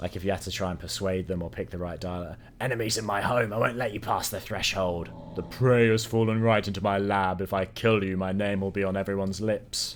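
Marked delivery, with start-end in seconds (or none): 2.6-10.0 posh, plummy, well-bred demon voice. Voicing a demon enemy met along the way, in a posh demon voice. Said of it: "Don't know why I picked such a posh voice for that demon".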